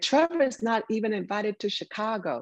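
high, mild screaming, kept in check. Quoting what a man told him back then, imitating someone screaming. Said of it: "He was screaming to the tip of his voice".

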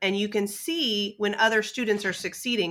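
plain

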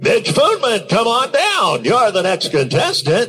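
put-on game show announcer voice. Showing an old radio impression: Johnny Olson impression. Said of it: "a really serviceable Johnny Olson".

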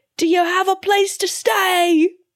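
put-on very high, thick, hammed-up New York accent. Imitating a movie character's line in a thick New York accent. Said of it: "His accent is so thick in this movie".

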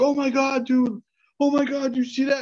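mock frantic, tearful, panicked crying, very high. Retelling a friend's reaction at a scary site: imitating a friend freaking out and crying. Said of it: "freaking out and crying".

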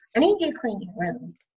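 ordinary talk

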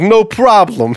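put-on New York cabbie accent. Telling a joke, voicing a cab driver in a New York accent. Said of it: "That's the best New York I've got".

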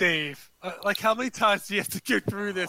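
put-on, let-down, disappointed tone. Imitating a brother replying to Dave about being duped: imitating a disappointed tone. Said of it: "like a disappointed".

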